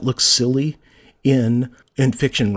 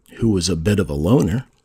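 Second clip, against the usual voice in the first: lowered, set-apart parenthetical tone; 6 semitones lower than usual. Reading an example sentence aloud, with a lowered voice on the aside. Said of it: "Notice how you get that little, that lowering of voice".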